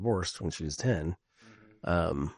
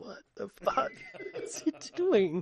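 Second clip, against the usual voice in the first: high-pitched, laughing disbelief. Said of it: "And I'm like".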